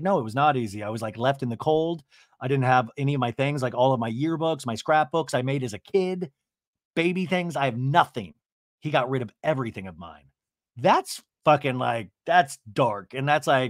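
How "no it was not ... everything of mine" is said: normal talking voice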